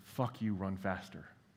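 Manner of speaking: close, hushed, private-sounding whisper. Retelling how a first sergeant ran up alongside during a fitness test: imitating a whisper in the ear. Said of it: "He whispers in my ear".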